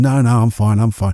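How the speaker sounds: imitated moody, curt tone. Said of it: "I even said it like that".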